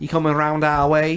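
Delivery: poor put-on Manchester accent. Speaker demonstrating the Mancunian dialect of a phrase, bad Mancunian accent. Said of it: "That's a very, very bad Mancunian accent".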